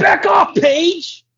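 put-on heated, angry voice, pitched very high. Act out Arquette telling Paige to back off, in an angry David Arquette voice. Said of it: "That's my David Arquette".

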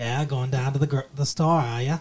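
put-on mimicked Maine accent. Speaker imitating a woman they are describing, in a Maine accent. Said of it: "She's got a little bit of the Maine accent".

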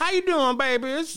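put-on very high, sweet, friendly older-lady voice.

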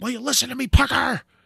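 very high, raspy, furious shout. Recalling a film scene where she gets mad, retelling Sigourney Weaver yelling. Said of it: "the way that she's yelling at him".

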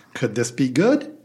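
good lifted with a rising question tune. Saying the segment's name as a question, rising at the end. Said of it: "It's got to rise at the end".

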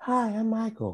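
very high, soft, hushed voice. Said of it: "he flipped back into the".

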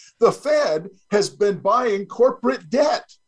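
rising voice climbing in incredulous disbelief. Speaking to a host's listeners, voice rising in incredulity. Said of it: "my voice rising in incredulity".

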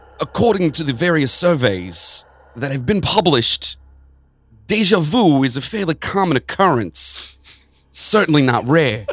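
drawn-out, slow, high-pitched disco-style voice. Reading an article quote aloud in the requested voice: disco-y Christopher Walken-like voice. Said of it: "Art Funkhouse would be kind of like a disco-y".

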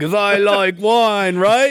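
bad, fake put-on British accent. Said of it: "your Josh Hartnett talking like a British person impersonations".

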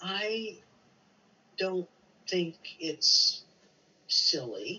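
very slow, halting, drawn out with pauses. Retelling a woman in her late 90s answering the speaker, said very slowly. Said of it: "she says very slowly".

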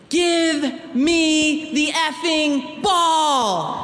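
high mock scream with long drawn-out me. Telling how an opposing player screamed at her goalkeeper, retelling a scream. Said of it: "and screamed".

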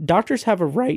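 voice cracking. Quoting dr. bach's line, voice cracking. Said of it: "my voice just cracked horribly".

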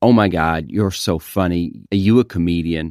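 terrible, low, put-on fake American accent. Showing how an American reacts to a joke: terrible American accent. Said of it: "That was my terrible American version".

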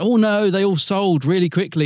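excited tone. Retelling a man's answer about new figure sets, imitating an excited man. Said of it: "he got really excited".

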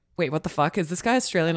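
ordinary delivery

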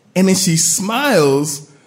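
ordinary delivery

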